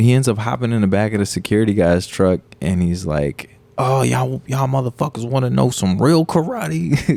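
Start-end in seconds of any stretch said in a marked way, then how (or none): 3.8-7.2 put-on anime-style voice, taunting and challenging in tone. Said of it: "the way he was saying the shit, it was like an anime".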